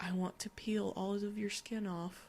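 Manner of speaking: very soft, hushed, quiet, creepy half-whisper. Reading a story, the four-year-old daughter speaks inches from her parent's face, half-whispered. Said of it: "looked right into my eyes and whispered".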